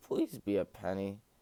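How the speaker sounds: pleading, breaking, cracked voice. Speaker with one more case still to go, voice cracking. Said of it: "Sorry if that was a voice crack".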